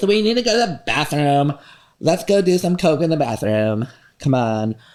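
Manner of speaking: put-on snotty, bitchy LA Valley girl party-girl voice. Explaining bathroom rules for a group, in a bitchy la valley girl voice. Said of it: "My L A bitchy Valley girl voice".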